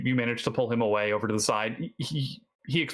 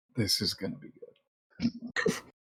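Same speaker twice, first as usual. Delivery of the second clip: hushed, soft whisper, close in; 5 semitones lower, 4 dB quieter than usual. Voicing a character leaning over to another: whispering quietly in an ear. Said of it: "just very quietly in her ear is like".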